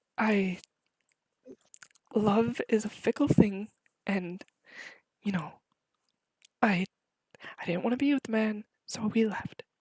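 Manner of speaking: whispered voice. Voicing people leaning in to speak privately: whispering. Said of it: "they'd whisper to your ears".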